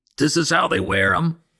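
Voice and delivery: through gritted teeth. Storyteller voices the wolf after his foot is caught, through gritted teeth. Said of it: "he said through gritted teeth".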